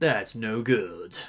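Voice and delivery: flat machine-like tone. Suggesting a line Metal Sonic could have said in the movie, robotic Metal Sonic voice. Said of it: "have him say like in a robotic tone".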